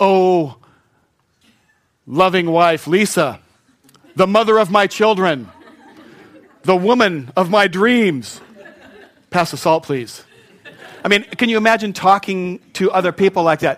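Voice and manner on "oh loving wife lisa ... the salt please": put-on reverent, churchy prayer voice. Speaker mocks how some people sound when praying aloud, in a mock prayer voice. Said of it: "their prayer voice be like this".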